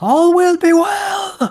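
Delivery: booming, very loud, very high yell, well stretched. Voicing a man rushing a torch toward twigs: shouting. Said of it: "as he shouts".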